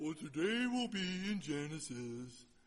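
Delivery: mock dull, boring pastor voice.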